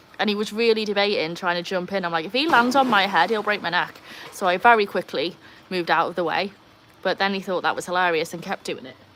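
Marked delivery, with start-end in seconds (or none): none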